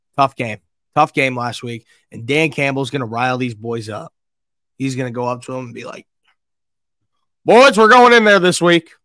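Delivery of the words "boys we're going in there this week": very loud, high put-on country accent, belted out. Imitating Dan Campbell rallying the boys, Dan Campbell in a put-on country accent. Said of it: "I don't know why I'm doing a country accent".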